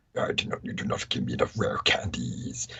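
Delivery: breathy, terrifying, menacing monster whisper. Playing Ninetales answering its trainer's scolding, terrifying Ninetales voice. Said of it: "that terrifying fucking voice".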